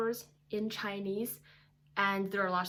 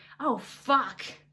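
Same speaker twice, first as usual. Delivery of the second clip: loud, exasperated, angry, frustrated curse; 3 semitones higher, 5 dB louder than usual. Teaching how to swear after dropping an egg, an angry frustrated curse. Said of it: "with anger and frustration".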